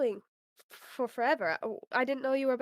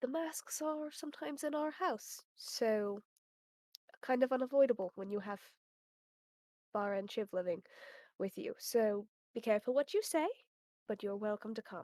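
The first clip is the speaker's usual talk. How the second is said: theatrical, dramatically hushed, soft undertone, lowered on purpose; 3 semitones lower, 7 dB quieter than usual. Warning a guest so other people cannot hear: dramatically lowered voice. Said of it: "she'll lower her voice dramatically so that other people cannot hear".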